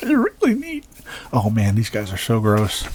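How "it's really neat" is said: excited, voice breaking and cracking very high. Speaker pointing out to listeners how the voice cracks, excited, voice cracking. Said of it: "You tell I'm excited when I go".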